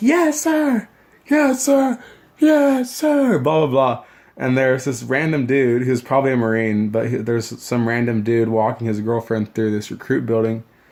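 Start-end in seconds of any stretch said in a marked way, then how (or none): 0.0-3.4 very high, very slow, drawn-out scream. Retelling recruits power walking and answering as ordered: imitating recruits screaming yes sir. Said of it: "Scream, 'Aye, aye, sir,' or 'Scream, yes, sir,'".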